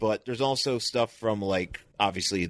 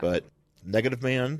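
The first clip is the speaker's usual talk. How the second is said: ordinary talk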